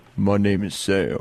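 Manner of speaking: put-on deep, very low manly voice. Asked to sound manly, giving a self-introduction in a deep manly voice. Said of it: "Let me hear your deep voice".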